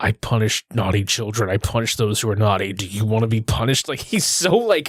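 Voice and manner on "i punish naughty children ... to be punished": mock stern whisper, lower pitch. Retelling how a mall Santa warns a girl on his lap: imitating a stern whisper. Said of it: "very sternly whispers to her".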